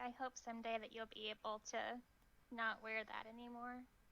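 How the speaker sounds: hushed, quiet, softly spoken words. A game narrator voices a character speaking to the player's character, quiet. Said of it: "Sunny just quietly says".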